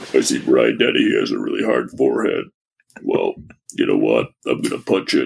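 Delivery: very low, rough, creaky voice, breath held. Doing a Rambo impression for the others after being teased: Rambo voice. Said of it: "I'm gonna be Rambo right now".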